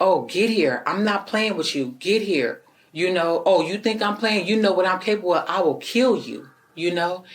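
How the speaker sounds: acted angry yelling. Recounting what a man yelled, retelling an angry yelled threat. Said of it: "he started yelling again".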